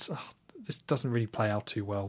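soft, unvoiced, whispered aside.

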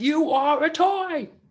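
weak, very high-pitched voice, very slow and stretched out. Imitating an actor as a cowboy toy: bad Woody impression by Tom Hanks. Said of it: "not one of my best impersonations".

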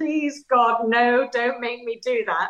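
tearful, sobbing, crying, begging tone. Speaker retelling being told to rewrite the book, acting out tearful begging. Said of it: "I'm crying, I'm sobbing, I'm begging".

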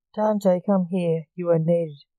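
ordinary delivery, nothing marked

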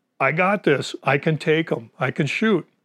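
mock insistent, pressing tone, yelling. Recounting yelling at their guide about taking the shot, retelling own yelling. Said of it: "I kept yelling at my guide".

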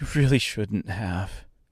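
concerned, fretful, worried, anxious tone. Narrating a character's reply after being carried over the river, in a worried voice. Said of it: "she said in a worried voice".

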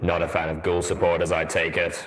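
deep masculine voice. Reading a story aloud, an armored character speaks from his helmet: deep masculine voice. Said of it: "deep, masculine voice of Steelhooves".

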